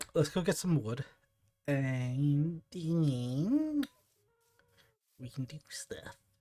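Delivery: put-on nerdy voice, drawn-out. Speaker briefly decides to sound like a nerd: nerdy voice. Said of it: "I decided to sound like a nerd just now".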